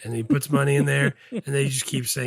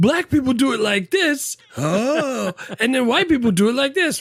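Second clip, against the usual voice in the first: brash nineties comedy-club delivery, very high pitch; 11 semitones higher, 6 dB louder than usual. Mocking old stand-up comedians: imitating nineties stand-up comedians. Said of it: "You make it sound like the, uh, nineties, uh, comedians".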